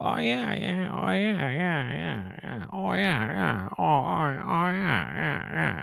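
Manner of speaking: put-on high, creaky, raspy voice. Trying out an impression for the other speaker: Adam Sandler impression. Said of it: "Adam Sandler impression".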